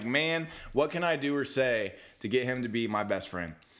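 usual speaking voice

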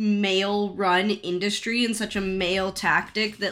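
ordinary talk

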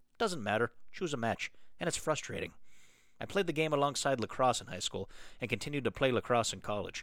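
amateurish put-on Canadian accent.

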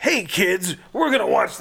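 campy, hammy horror-host voice, high and loud. Imitating a horror villain introducing episodes as a host: campy Freddy horror-host voice. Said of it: "doing Crypt Keeper stuff".

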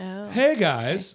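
high, loud Southern California way of talking. Imitating how a guy in a play talked, in a southern california voice. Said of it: "It was very like... Southern California".

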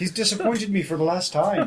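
thick comic Irish brogue. Game master voicing a character in the game: comic stage-Irish accent. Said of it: "At what point did you become this Irish?".

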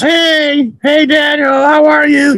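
grating, very high, drawn-out annoying yell. Describing a neighbor who greets you as you leave for work: imitating an annoying yell. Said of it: "he like annoyingly yells".

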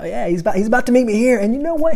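put-on British accent.

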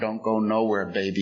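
whispering in a put-on voice. Retelling how an old sponsor held him close: imitating someone whispering. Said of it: "she's whispering in my ear".

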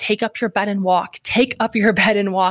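restrained, mild yell, said twice over. Retelling how he screamed over his dad until the monitor beeped: retelling a scream at full lungs. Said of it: "start screaming at the top of my lungs".

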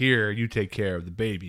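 ordinary delivery

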